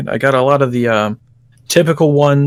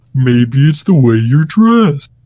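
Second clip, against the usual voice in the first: cartoon-character voice, pitch swooping around; 4 dB louder than usual. Quoting a cartoon line to another speaker: Patrick Star voice. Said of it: "That sounds like Patrick".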